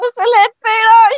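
excited shout, high-pitched and loud.

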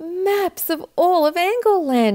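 excited exclaiming, very high, loud and drawn out. Radius, opening the chest with a cousin, exclaims. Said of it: "exclaimed Radius".

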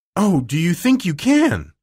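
gasped out. Narrator reads a woman turning to answer a girl, gasping. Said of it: "she gasped".

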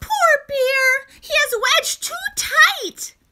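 tiny, very high, squeaky mouse voice. Reading a story aloud, voicing the mouse: squeaking mouse voice. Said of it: "Mouse squeaks".

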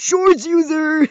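high, slow cartoon nerd voice. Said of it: "Do the shorts user voice".

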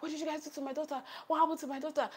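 play-acted high-pitched screaming. Retelling finding a child hurt after braiding: imitating her own screaming. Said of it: "I started screaming".

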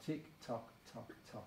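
soft, very quiet murmur under the breath.

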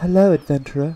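keen, eager, high-pitched voice. Reading out a game character's greeting to the player: voicing Millie Miller. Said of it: "you're larping as that, as Millie Miller".

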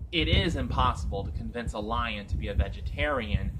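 ordinary delivery

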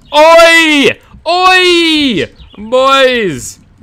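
very high, very loud, shrill shouting. Calling out to other players during a game match: really loud shouting. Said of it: "I'm really loud".

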